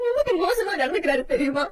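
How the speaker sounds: tearful speech broken by sobs. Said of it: "இப்ப எதுக்கு கண்ணை கசக்குற".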